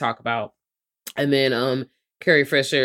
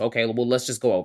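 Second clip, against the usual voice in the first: mock dismissive tone, lower and quieter; 3 semitones lower, 4 dB quieter than usual. Retelling his reply to her about her lines, imitating a dismissive tone. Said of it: "Real dismissive and shit".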